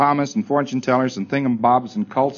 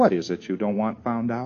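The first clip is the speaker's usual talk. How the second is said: put-on hushed voice, lower and quieter; 3 semitones lower, 6 dB quieter than usual. Suggesting what one could ask the other side, imitating a quiet question. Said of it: "If you just said in a quiet voice".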